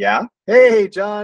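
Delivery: high-pitched, loud, excited voice.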